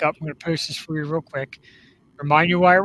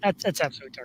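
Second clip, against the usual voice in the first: normal talking voice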